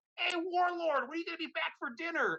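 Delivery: very high, loud yell. Retelling how dad called out the door: imitating dad yelling. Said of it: "he's yelling out the door".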